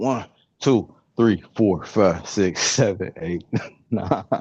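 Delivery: speech broken up by laughter. Counting aloud during a live session: laughing while counting. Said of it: "I'm laughing".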